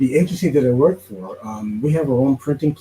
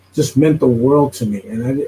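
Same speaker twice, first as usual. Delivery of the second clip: ordinary talk, nothing marked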